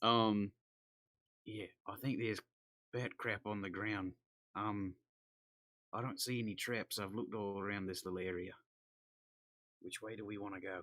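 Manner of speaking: whispering. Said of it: "your whisper laughing is a lot louder than my actual whispering".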